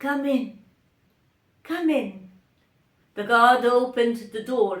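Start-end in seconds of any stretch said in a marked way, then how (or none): 0.0-2.3 feeble, weak, ailing, sick-sounding voice. Reading a story, the narrator voices the king answering a knock: weak, sick voice. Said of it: "a weak and sick voice was heard saying".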